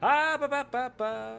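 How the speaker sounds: very loud, very high, very slow drawn-out syllables. Testing audio levels in the streaming software: loud test voice. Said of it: "I'm doing loud so I can test".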